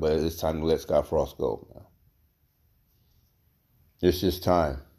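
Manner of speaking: trying not to cry, holding back tears. Speaking about the team's losses, holding back tears. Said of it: "I'm trying not to tear up".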